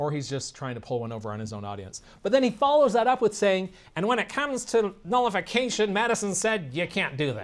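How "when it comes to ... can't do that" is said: high, nasal, grating whine, drawn out. Quoting what another man said, imitating his nasal, whiny voice. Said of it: "Does that kind of sound like him? His nasally, whiny voice".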